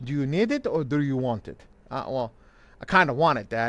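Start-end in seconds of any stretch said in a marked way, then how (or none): 0.0-1.6 put-on heavy, thick Arabic accent.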